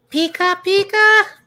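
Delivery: shrill, very high, loud cartoon creature squeal. Talking about favorite starter Pokemon, doing its cry, Pikachu voice. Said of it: "The Pikachu voice?".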